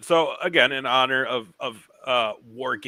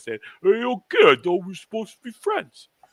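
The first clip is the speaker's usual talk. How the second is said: put-on mumbling movie-star voice, higher; 7 semitones higher than usual. Quoting a favorite movie scene where he yells at the kid: Sylvester Stallone impression. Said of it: "pretty spot on Syl-, Syl-, Sylvester Stallone".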